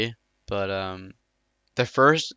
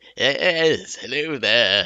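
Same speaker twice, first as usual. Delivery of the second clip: put-on, old-sounding British voice; 2 semitones higher than usual. Retelling pretending to be a character in a game, Emperor Palpatine voice. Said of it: "doing his voice ... his old British voice".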